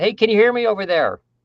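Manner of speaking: very high-pitched, loud, projected calling out. Demonstrating how most people project their voice, projecting with raised pitch. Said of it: "I'm raising my pitch more than".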